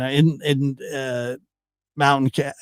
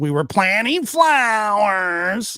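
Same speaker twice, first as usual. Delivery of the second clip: mock insincere inflection, much higher, slower; 7 semitones higher than usual. Retelling how she said the planting flowers line, imitating her put-on inflection. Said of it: "she kind of did the influx in her voice".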